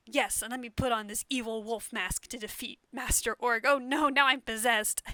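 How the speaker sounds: mocking, over-the-top, dramatic angsty warrior hero voice. Mocking how a noble warrior character talks: mocking over-the-top angsty warrior. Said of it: "but then he's like".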